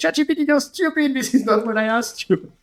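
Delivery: high-pitched yelling outburst. Retelling how a daughter talks to chat G P T: imitating a daughter yelling. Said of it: "sometimes she's yelling at me".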